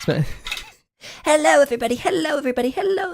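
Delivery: very high, slow, squeaky cartoon kid voice. Speaker tries to copy a voice actor's kid character, doing an impression of a kid character's voice. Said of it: "Whoever that voice actor is".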